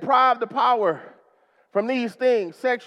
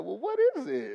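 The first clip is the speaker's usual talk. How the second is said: put-on sweet, grandmotherly tone; 9 dB quieter than usual. Speaker retells showing something they built to their grandma; imitating sweet grandma voice. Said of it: "that sweet grandma voice".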